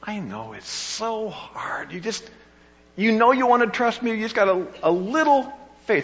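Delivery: mock sympathetic tone. Imagining how God would say the line, with a put-on understanding tone. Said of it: "Or do you see him saying it with an understanding".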